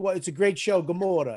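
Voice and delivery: put-on Italian-sounding accent. Speaker retells what he said to a woman: saying it like an italian. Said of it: "Are you saying Gamora like you're from Italy?".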